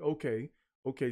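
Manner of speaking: ordinary talk, nothing marked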